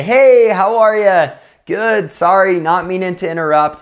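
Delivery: friendly, pleasant tone. Advising how to greet hostile neighbors on the street, the speaker shows a smiling, friendly tone. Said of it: "you smile".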